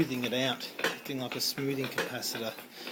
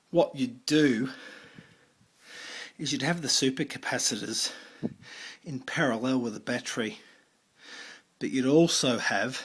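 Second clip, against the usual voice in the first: slightly breathless, short of breath. Explaining how to wire a circuit, a bit out of breath. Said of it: "I'm a bit out of breath there".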